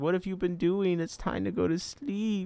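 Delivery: high little cat voice. Speaking for the cat, who has just jumped up: voicing the cat. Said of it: "She says".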